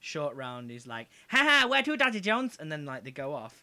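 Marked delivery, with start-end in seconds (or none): 1.3-2.5 shrill, very loud, high squealing voice. Retelling the scene where Short Round picks him up: Short Round impression. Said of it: "It was a good impression".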